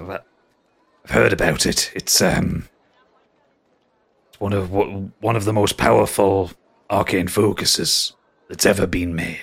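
somber. Narrating a character whose anger subsides as he answers, somber. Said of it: "He actually gets really somber".

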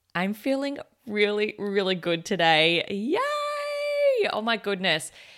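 upbeat, happy, swooping sing-song with stretched cheer. Starting the day-four update of a cleanse: happy, feeling really good. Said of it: "if you can tell by the tone in my voice".

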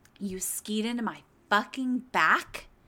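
affronted diva voice completely losing composure. Imagining someone skiing into them, acting it out: imitating Gwyneth Paltrow losing it. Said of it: "Gwen losing her fucking shit and having a diva moment".

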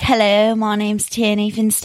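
imitated fake British accent. Retelling how they used to pretend to be british on stage: imitating own fake british accent. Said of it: "I would pretend to be British".

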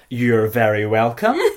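very loud, gushing, overly polite customer-service voice. Showing how you must say it in customer service voice. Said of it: "customer service voice, ... you have to be like".

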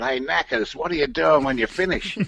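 slightly rough, roughened-up voice. Retelling how Paul Turner came into the studio and spoke to you, in Paul Turner's bit of a rough voice. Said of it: "Paul had a bit of a rough voice".

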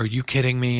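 ordinary talk

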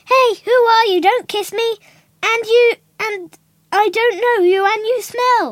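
very loud, high yell at full blast. Reading a rhyming book aloud, Beauty wakes up: yelling. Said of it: "Beauty wakes up and yell".

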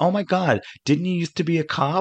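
put-on high, grating American Valley girl voice. Retelling a teaser scene where a woman at a party speaks: grating American Valley girl voice. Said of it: "a grating American voice, ... She's supposed to be a Valley girl".

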